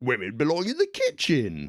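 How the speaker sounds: put-on sing-song, high-swinging, wizened old bloke voice. Mocking how a cartoon portrays Mister Labrador: Mister Labrador as wizened old bloke. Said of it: "this wizened old bloke who's just like".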